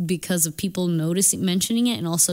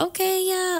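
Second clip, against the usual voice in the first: mocking put-on cheerful service voice, higher; 12 semitones higher than usual. Imitating a fake customer service voice she can't do anymore: imitating fake customer service voice. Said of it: "I just cannot do the fake".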